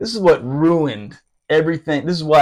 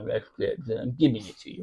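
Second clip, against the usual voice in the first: very soft, low, barely audible old-cartoon hound voice; 4 semitones lower, 11 dB quieter than usual. Retelling a superior's reply as he handed down punishment, Droopy voice. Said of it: "It was really like Droopy from the old cartoon".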